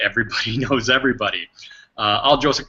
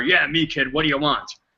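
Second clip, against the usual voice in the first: put-on gruff old-guy voice. Speaker retells the guy in charge at a job site answering him, imitating a gruff old guy. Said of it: "this gruff old guy smoking a cigar".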